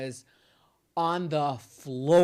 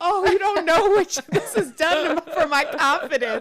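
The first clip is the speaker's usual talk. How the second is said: very high-pitched, loud, gushing outburst; 7 dB louder than usual. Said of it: "she said it like, / like you said, "Oh, I love your hair."".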